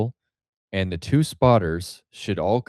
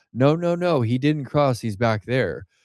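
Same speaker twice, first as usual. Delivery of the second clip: insistent, high, urgent, protesting tone; 4 semitones higher than usual. Telling a story, the speaker retells people yelling at the spotter. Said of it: "people start yelling at the spotter".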